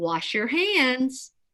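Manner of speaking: "hands" lifted with a rising, question-like pitch. Showing how an instruction can sound like a question: rise on hands. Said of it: "just by that simple inflection, in, it, it insinuates a question".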